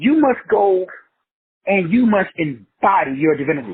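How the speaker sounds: very slow, deliberate, word-by-word delivery. Telling an audience to hear this, the speaker delivers it very slowly. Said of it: "I gotta say it real slow".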